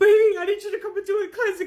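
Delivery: shrill, whiny sobbing wail, very high. Retelling a late-night phone call, the speaker is imitating someone screaming and crying. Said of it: "screaming, crying like a little fucking girl".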